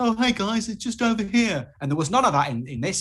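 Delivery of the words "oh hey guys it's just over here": very high, matey, chummy buddy-buddy cartoon voice. Critiquing an animated character's voice, imitating it in a put-on chummy voice. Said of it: "this chummy chum chummy voice go".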